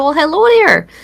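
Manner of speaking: put-on loud, high-pitched Minnesota accent on hello. Retelling a greeting to a panel of producers: imitating own minnesota accent. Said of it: "I just showed them my Minnesota accent".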